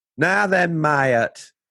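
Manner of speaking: Lincolnshire-accented speech. Talking about accents, showing how people in Lincolnshire speak: Lincolnshire accent. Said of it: "people speak like that".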